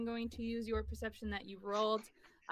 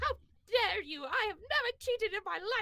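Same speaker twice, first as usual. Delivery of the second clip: put-on high, gasping, indignant, outraged elderly woman voice; 10 semitones higher, 3 dB louder than usual. Voicing an old lady accused of cheating: gasping, outraged old lady.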